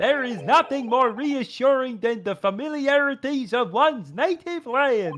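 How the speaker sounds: put-on, fake Swedish accent. Reading a line aloud and joking about it: put-on Swedish accent. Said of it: "Don't you like my Swedish accent?".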